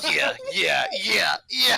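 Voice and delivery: grunting yeahs.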